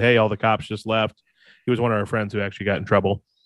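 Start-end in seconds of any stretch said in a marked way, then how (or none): none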